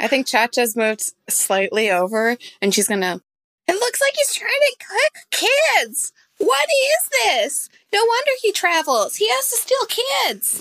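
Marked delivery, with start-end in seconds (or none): 3.7-10.6 very high, shrill, shrieked put-on outburst. Voicing a character who yells about the cook: yelling in character. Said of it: "I'm gonna yell something horrible".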